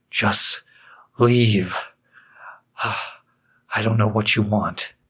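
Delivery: frightened pleading. Narrator reading a scary story, a trembling man begs the clown: terrified pleading. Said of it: "[name] backed up against the wall, / In this Halloween Special, I narrate for you a favorite scary story of mine..."Laughing in the Dark." Written in the fall of 2014 by yours truly, this All Hallow's".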